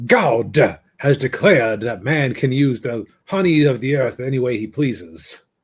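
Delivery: put-on voice with a Southern accent. Quoting the lawyer character's courtroom speech, in John Goodman's Southern accent. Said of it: "doing his best Southern accent".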